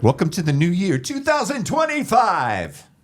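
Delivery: very high, swooping, showy game show announcer. Turning to the others after a family squabble: game show host voice. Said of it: "Did you like that voice?".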